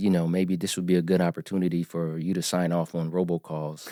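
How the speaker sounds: normal talking voice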